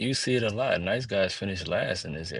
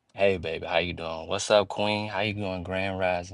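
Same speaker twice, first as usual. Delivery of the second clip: acted nice, sweet tone. Acting out what a nice guy says to a woman: nice guy sweet talk. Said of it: "a nice guy is like".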